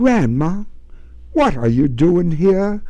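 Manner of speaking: tender, gentle. Finding her grandmother alone after hours of searching, she asks softly. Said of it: "Betty asked softly".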